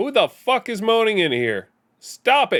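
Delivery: very loud, high-pitched yell. Reacting to a moaning sound from the game: yelling very loudly. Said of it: "I just yelled very loudly".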